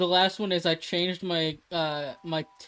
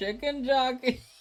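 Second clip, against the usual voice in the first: high voice breaking and cracking mid-phrase; 7 semitones higher than usual. Repeating a favorite vocal stim, with a voice crack. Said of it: "That was a voice crack".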